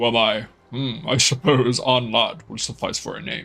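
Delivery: deep, low, put-on creature voice. A role-player voices a being answering a questioner, in a deep voice. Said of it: "we've given it a deep voice now".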